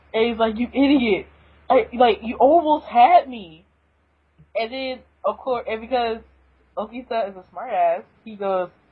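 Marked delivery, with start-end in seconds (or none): 0.5-3.6 mock fed-up, ticked-off tone, slow. Recapping a comic page, acting out a pissed-off Hijikata. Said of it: "he's kinda pissed".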